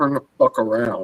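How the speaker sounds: mock irritated, sharp voice. Retelling what his partner says on the phone: imitating an annoyed tone. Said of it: "with a tone".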